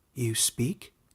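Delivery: weak, faint voice. Narrator reading a man startled by a talking creature, in a faint voice. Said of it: "he said in a faint voice".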